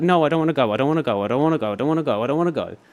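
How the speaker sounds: tearful, crying plea, repeated over and over. Recounting being pulled back toward the fire, the speaker is retelling a tearful plea. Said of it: "And I'm sitting there crying".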